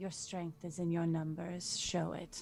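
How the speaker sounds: whispering. Sending the same message to the two others in the game; whispered. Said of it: "I'll whisper into".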